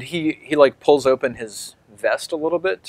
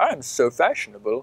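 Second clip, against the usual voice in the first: foppish, vain, showy dandy voice. Describing a man in a foppish hat to the listeners, foppish dandy voice. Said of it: "He's like".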